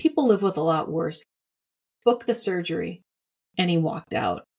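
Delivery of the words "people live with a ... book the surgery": icy, cold, unfeeling brush-off tone. Retelling the doctor's reply to her, imitating a cold remark.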